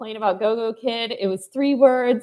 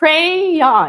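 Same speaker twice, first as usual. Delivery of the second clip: crayon with first syllable cray stressed; 5 semitones higher than usual. Noting how Meredith says the word: crayon stressed on first syllable cray. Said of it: "but still the emphasis on the first one".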